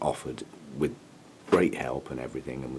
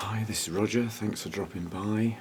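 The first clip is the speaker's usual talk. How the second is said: pitched-up, just-woke-up voice; 7 semitones higher than usual. Greeting whoever dropped by at six in the morning, talking quietly. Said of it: "I'm talking quietly because it's six o'clock".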